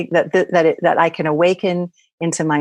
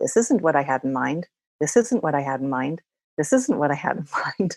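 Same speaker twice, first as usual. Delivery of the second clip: mock muttering under breath, quieter; 6 dB quieter than usual. Retelling what a homeless man muttered over and over: imitating someone muttering. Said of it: "he just muttered under his, his breath".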